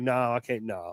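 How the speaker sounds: very slow, drawn-out, overwhelmed, emotional voice. Imitating own future reaction to a picture: imitating own overwhelmed self. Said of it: "I'm gonna be like".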